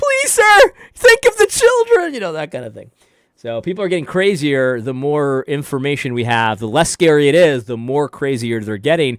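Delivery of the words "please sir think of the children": frantic, desperate, very high-pitched pleading voice. Retelling how a store worker called after them: imitating a desperate plea. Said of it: "kinda desperately like".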